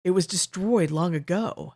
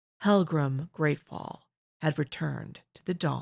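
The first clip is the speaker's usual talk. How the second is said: usual speaking voice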